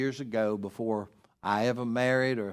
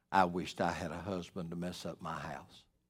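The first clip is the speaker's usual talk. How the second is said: quiet, calm speech, lower and quieter; 7 semitones lower, 9 dB quieter than usual. Telling an audience a story, the speaker quotes a woman: imitating a calm, quiet remark. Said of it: "just very calmly and quietly said".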